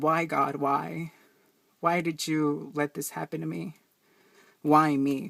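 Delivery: imploring, pleading voice. Retelling how the mother pleaded to God: imitating a pleading prayer. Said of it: "she pleaded to God".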